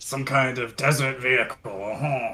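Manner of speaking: put-on French accent. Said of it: "He's really getting into character for this one".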